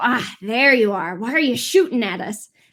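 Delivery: monster-like character voice. Voicing the yellow Sahagin who confronts a player for shooting: voicing the yellow Sahagin. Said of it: "the yellow one's gonna go".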